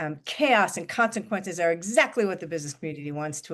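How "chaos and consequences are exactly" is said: plain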